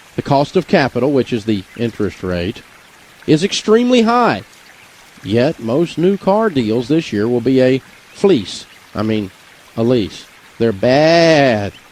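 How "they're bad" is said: baa-ing bleating sheep voice. Talking about new car lease deals, in a bleating sheep voice. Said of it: "that's my impression of a sheep getting fleeced".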